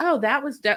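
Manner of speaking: high, very offhand, nonchalant tone.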